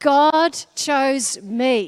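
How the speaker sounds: loud, slow, full of conviction.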